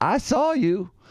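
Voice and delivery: high, pointed, accusing tone.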